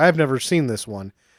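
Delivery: plain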